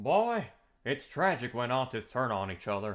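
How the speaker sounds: slow, drawn-out drawl with swinging, swooping pitch. Reading a post aloud after another speaker asks for Hank Hill's voice. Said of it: "you say this in, like, Hank Hill's voice".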